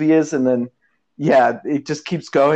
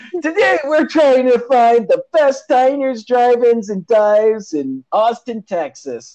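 very high, slow, stretched-out host-style yell; 10 semitones higher, 3 dB louder than usual. Imitating Guy in the car, yelling at the camera: imitating Guy Fieri yelling. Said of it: "he's yelling at the camera".

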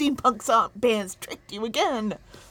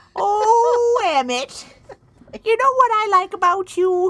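put-on high, loud old granny voice. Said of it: "I'm already wearing a shawl".

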